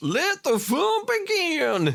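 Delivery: very high, stretched-out cowboy drawl, yee-haw style. Recounting a story's events, voicing Scarecrow Bob's line in his yee-haw voice. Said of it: "he's got a sort of yee-haw yeah".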